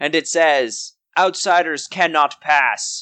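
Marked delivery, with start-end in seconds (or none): 1.2-3.0 hollow, echoing, disembodied voice. Game master voicing a disembodied voice from a hollow suit of armor: disembodied echoing voice. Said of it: "a disembodied voice echo out of the hole".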